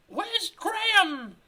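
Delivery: falsetto pushed way up high. Reading a story aloud, the speaker voices Carol's question: Carol falsetto voice. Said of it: "You get a falsetto voice for this".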